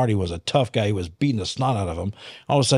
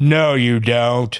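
put-on demon voice, louder; 4 dB louder than usual. Retelling a confrontation where a demon answers back: imitating a demon's voice. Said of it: "And the voice goes".

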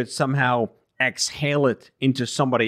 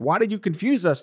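mock yelling, higher-pitched; 8 semitones higher than usual. Recounting how people reacted to changing mask advice, retelling people yelling. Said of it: "And then they're yelling".

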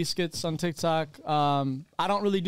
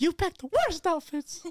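squeaky cartoon voice, much higher pitch; 13 semitones higher than usual. Quoting what she said to him before he came here, in a Mickey Mouse voice. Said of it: "Why did she sound like Mickey Mouse?".

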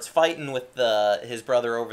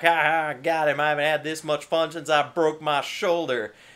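put-on cackling, laughing through the words; 4 semitones higher than usual. Retelling what laughing truckers said, imitating cackling laughter. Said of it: "They're just laughing and cackling".

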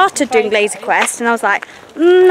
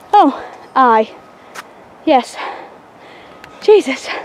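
out of breath, breathless, winded. Exploring a place with friends and looking for the next waypoint, out of breath. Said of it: "I'm quite out of breath".

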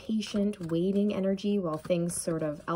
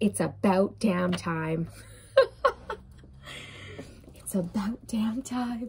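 speaking through laughter, much slower. A card reader repeats a message she just heard during a reading, laughing. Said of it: "I'm laughing because I just heard".

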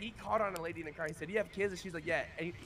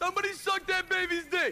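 very high-pitched, very loud shouting outburst; 11 semitones higher, 7 dB louder than usual. Describing a video to the others, imitating Cuba Gooding Jr. yelling. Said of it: "Cuba Gooding Junior yelling".

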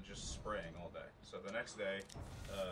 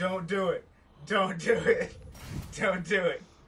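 very shrill, very loud, high, drawn-out panicked screaming; 10 semitones higher, 16 dB louder than usual. Retelling someone waking to a burrito in his face, imitating his screaming. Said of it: "starts screaming".

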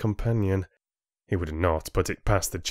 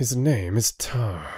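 spoken through clenched teeth. Rin answers the chieftain who called Tar a beast, through clenched teeth. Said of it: "Rin replied through clenched teeth".

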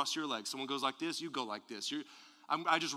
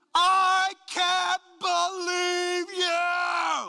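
very slow, very loud, shrill high drawn-out yell; 10 dB louder than usual. Speaker giving advice on anger shows what nobody does: yelling very slowly. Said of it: "somebody yell real slow".

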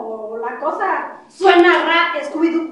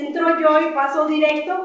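ordinary talk

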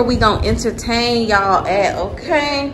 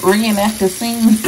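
ordinary talk, nothing marked

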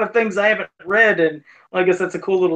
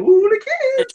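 very high, strange, weird put-on cartoon voice; 3 dB louder than usual. Discussing characters' voices, imitating one with a weird voice. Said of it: "one of them has a weird voice".

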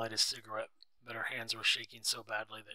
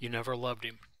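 plain

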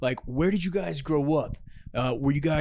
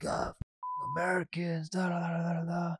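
put-on slurred, stumbling, smeared drunken babble; 2 semitones higher, 8 dB quieter than usual. Retelling a stumbling man's words: imitating a slurring drunk. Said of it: "slurring his words".

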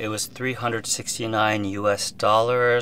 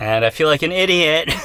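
fairly loud, raised speaking voice; 6 semitones higher, 6 dB louder than usual. Testing a microphone's levels on camera, speaking fairly loudly. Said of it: "And now I'm speaking fairly loudly".

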